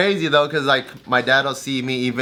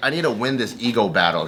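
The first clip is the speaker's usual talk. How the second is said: ordinary delivery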